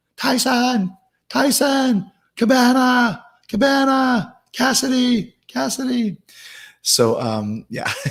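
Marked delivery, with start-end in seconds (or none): 0.2-6.2 put-on wrestler's scream, very high and very slow. Retelling being held back in the ring: imitating own screaming. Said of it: "being held back and screaming Jericho".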